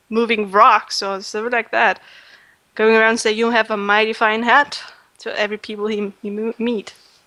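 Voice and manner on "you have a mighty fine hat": plain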